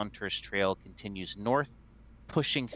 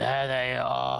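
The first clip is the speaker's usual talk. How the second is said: put-on loud, creaky, drunken rasping voice; 4 semitones higher, 5 dB louder than usual. Narrating a story, voice a man's line, rasping. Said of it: "he rasps".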